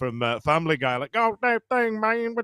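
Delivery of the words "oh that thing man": mumbly, pitched-up cartoon Texan accent. Speaker recalling a failed movie impression that came out differently, in a Boomhauer voice. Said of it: "I ended up sounding like Boomhauer".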